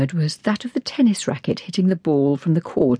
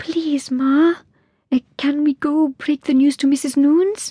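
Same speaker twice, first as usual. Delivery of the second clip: slow, high-pitched, drawn-out begging tone; 11 semitones higher than usual. Millie speaks to Ma, begging. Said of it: "begged Millie".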